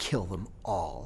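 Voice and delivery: low, hushed half-whisper, spoken close in. Retelling what a man half-whispered to him while hugging him, half-whispered. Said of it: "he whispered to me".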